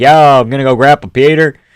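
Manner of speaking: put-on broad, casual, over-the-top American accent. Imagining someone saying the name: Bryce Mitchell impression. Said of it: "a Bryce Mitchell being like".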